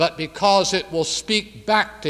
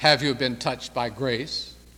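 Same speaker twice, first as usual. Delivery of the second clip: sarcastic tone, lower; 4 semitones lower, 4 dB quieter than usual. Retelling the king's reply to Becket by the seashore, retelling the king's sarcasm. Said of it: "with sarcasm".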